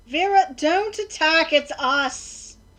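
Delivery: very loud, drawn-out, high yell. Calling out in character to Vera not to attack: yelling out. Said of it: "I'll yell out once she's in earshot".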